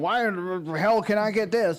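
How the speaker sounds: ordinary talk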